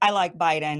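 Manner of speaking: ordinary delivery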